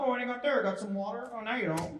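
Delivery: very high-pitched, obnoxious put-on voice. Joking to someone holding water: almost a Plinkett voice. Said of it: "It's almost Plinkett, not quite".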